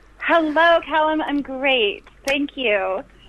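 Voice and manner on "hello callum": high, enthusiastic voice. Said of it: "you sound so enthusiastic".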